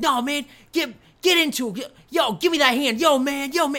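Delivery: high, loud, goading, hectoring needling yell. Retelling a promoter pushing a wrestler in a promo: imitating Paul Heyman yelling. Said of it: "Paul Heyman, like, needling and yelling at this guy".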